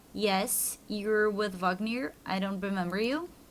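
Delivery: ordinary talk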